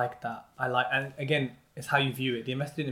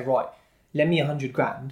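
usual speaking voice

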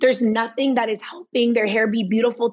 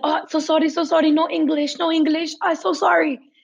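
put-on high voice, profusely and very apologetic; 5 semitones higher than usual. Retelling how mom answered english callers: imitating mom apologizing. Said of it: "very apologetic".

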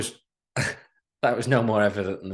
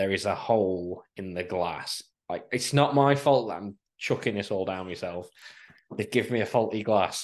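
usual speaking voice

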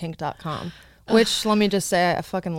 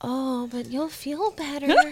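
unsettling, creepy voice, pitched up; 7 semitones higher, 6 dB quieter than usual. Showing a typical line from a stepmom role: creepy stepmom voice. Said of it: "the creepy one that's like".

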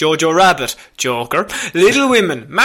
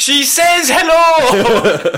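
mock, high, shouted line; 9 semitones higher than usual. Imagining the other speaker dubbing a film aloud in the cinema: imitating someone shouting. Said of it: "You just shouted at me in the cinema".

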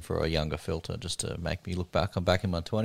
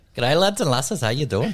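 put-on Irish accent, much higher and louder; 7 semitones higher, 5 dB louder than usual. Podcast host opening the episode for listeners, in a put-on irish accent. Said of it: "I was doing my Irish accent".

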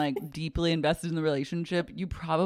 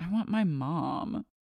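muttering to himself, mumbling under his breath. Retelling what a character did at one point, muttering to himself. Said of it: "he mutters to himself".

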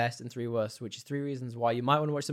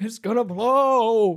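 put-on old man voice, higher and louder; 10 semitones higher, 10 dB louder than usual. Quoting a movie character's repeated warning line: old man voice. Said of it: "got that old man voice as well".

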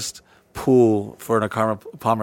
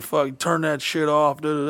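mock yelling, higher pitch; 6 semitones higher than usual. Retelling how a cop turned off the bike: imitating a cop yelling. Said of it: "started yelling".

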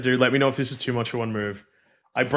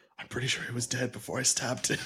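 very hushed, private whispered aside; 11 dB quieter than usual. A player whispers privately to another player in the game: whispering. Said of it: "I also would like to whisper to you".

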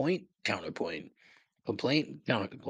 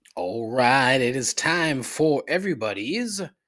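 slow, loud, drawled Southern accent; 3 semitones higher, 6 dB louder than usual. Opening the gripes segment of the show: Southern accent. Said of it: "why did I say that with a Southern accent?".

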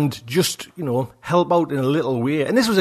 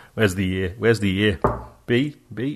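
low robotic computer voice; 6 semitones lower than usual. Speaker explains the setup to Josh, doing an impression of the computer. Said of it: "that's my impression of the computer".

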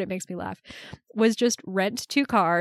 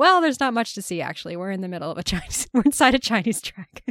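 plain

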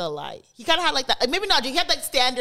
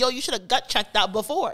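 usual speaking voice

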